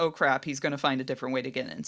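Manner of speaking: low, fast, alarmed voice, rattled off quickly.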